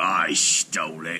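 words pushed out in a growl. Reading a myth, a frost giant answers a visitor's question, growling. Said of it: "he growled".

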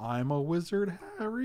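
slow, voice cracking slightly mid-line. Sick during a card game, quoting a line, voice cracking. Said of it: "Did you hear my voice crack just a little bit there?".

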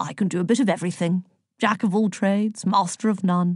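plain

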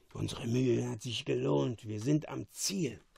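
hushed half-whisper under the breath. Pointing his king to the door of the cell; half-whispered. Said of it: "flüsterte Caliban".

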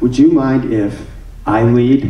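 acted-out sheepish tone. Retelling a dance, the speaker acts out a partner asking to lead: retelling a sheepish ask. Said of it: "she real sheepishly asked this".

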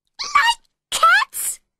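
very high, very loud, shrill furious mouse squeak. Reading the story, the narrator voices the mouse answering Alice in a high, angry mouse voice. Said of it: "Cried the mouse in a high, angry voice".

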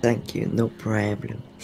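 tired-out voice. Thanked by the host for playing, the other player replies, exhausted. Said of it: "you sound exhausted".

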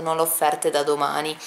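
ordinary talk

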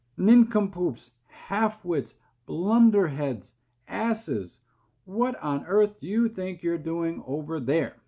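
all-out, high yell at full volume. A narrator reads the centipede yelling insults at the distant cloudmen, yelling as loud as possible. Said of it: "he yelled".

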